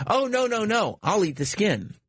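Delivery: put-on humorless delivery, very high, drawn out slowly. Retelling a guy's reply at a dinner, imitating a humorless joking tone. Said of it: "there's no humor to his voice".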